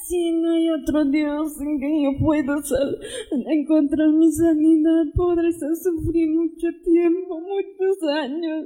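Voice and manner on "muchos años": weeping, tearful, sobbing with joy. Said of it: "Está llorando".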